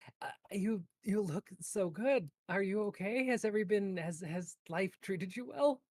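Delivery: stumbling, choked-up, high voice, fighting back tears. Voicing a tearful character greeting someone after long absence: choked up voice. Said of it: "trying to talk around, like, the choked up voice".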